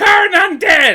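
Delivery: shouting loudly. Game narrator voices a character casting a spell: screaming a spell. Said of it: "another he screams".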